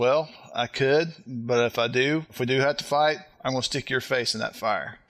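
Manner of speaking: cool, composed, very calm delivery. Retelling how an uncle answered a challenge to fight: imitating a very calm threat. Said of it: "my uncle is just very calm".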